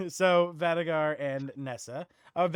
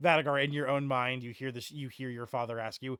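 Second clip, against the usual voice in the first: ordinary talk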